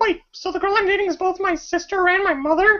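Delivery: squeaked out at very high pitch. Retelling someone's joke about the casting, speaker does a Mickey Mouse impression. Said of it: "that is an awesome Mickey Mouse impression".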